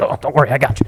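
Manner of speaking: creepy, soothing, falsely reassuring voice. Acting out someone walking around beaches offering help: imitating a beach pedophile. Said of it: "He's he's like".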